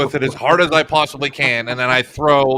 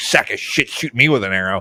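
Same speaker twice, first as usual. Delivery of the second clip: grumbling under breath, much lower pitch; 4 semitones lower than usual. Playing a character who kicks a fallen goblin, a player is grumbling under breath. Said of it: "just kind of grumbling under my breath".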